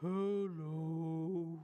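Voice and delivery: deep, low, dropped-down voice. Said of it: "say hello as low as we can".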